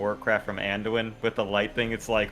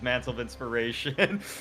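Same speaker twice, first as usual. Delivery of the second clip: ordinary delivery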